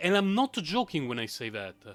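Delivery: ordinary delivery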